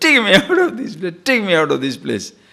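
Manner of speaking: high hollered shout, said twice over. Retelling a joke about an actor in a gorilla cage: imitating someone shouting. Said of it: "starts shouting".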